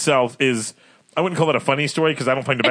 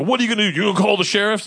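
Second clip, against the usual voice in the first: mock angry, raised, high-pitched yell; 8 semitones higher than usual. Retelling what a man yelled at a woman, imitating a man yelling. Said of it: "I'm going to try to do my best voice there".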